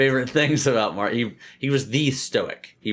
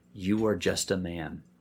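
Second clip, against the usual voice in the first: soft, slow, deliberate, hushed half-whisper; 4 semitones lower, 7 dB quieter than usual. Retelling how a slave spoke into the emperor's ear: imitating a half-whisper. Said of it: "he would whisper in his ear".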